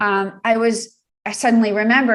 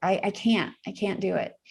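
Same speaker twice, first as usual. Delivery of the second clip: ordinary talk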